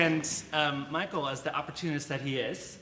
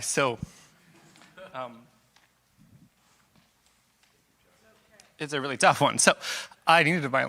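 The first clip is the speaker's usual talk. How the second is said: tearful, crying while speaking; 7 dB louder than usual. Telling a hard story to listeners, crying while speaking. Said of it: "Thank you for letting me cry".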